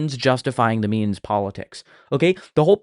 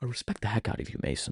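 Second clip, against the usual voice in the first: put-on whispered, patronizing, condescending lecturer voice; 2 semitones lower, 13 dB quieter than usual. Mocking how James speaks to Mason, in James's condescending tone. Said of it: "speak to you in this condescending tone".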